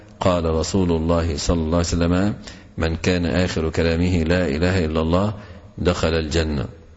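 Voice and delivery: ordinary talk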